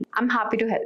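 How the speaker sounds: flat, apathetic, indifferent, level monotone. Demonstrating how tone changes words, say it in a monotone, indifferent tone. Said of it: "monotone or indifferent tone".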